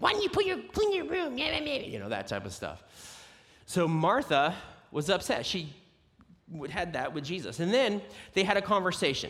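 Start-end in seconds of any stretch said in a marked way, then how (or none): 0.0-1.4 put-on yelling voice, much higher. Retelling Martha questioning Jesus, the speaker does a fake mom yelling at her kid. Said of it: "my fake mom yelling at your kid voice".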